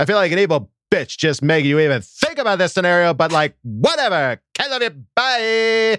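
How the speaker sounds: put-on high, swooping, sassy Southern California valley girl voice. Doing a bit that the other speaker praises: sassy valley girl voice. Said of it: "You do such a good, like, sassy girl".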